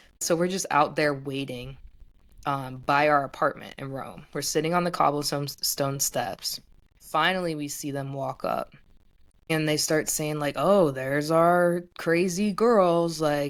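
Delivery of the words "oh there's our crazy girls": imitated slurred speech. Retelling what the two arriving figures said: imitating slurred words. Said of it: "slurring their words".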